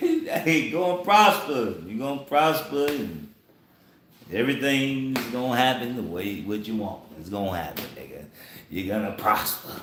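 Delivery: dripping sarcasm with a falsely reassuring tone. Imagining how a prophet answered the king: imitating a sarcastic reply. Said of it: "he probably said".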